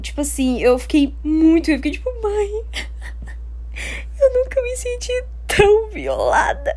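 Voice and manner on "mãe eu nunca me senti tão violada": high, crying, sobbing voice. Retelling the moment she ran into her mother, reenacting crying to her mom. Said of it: "Chorando pra minha mãe".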